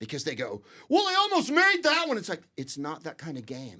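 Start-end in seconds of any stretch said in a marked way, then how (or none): 0.9-2.2 very high, loud, screaming American sportscaster voice. Mocking how the american announcers call football: imitating an american football announcer. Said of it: "I can't stand watching the American announcers".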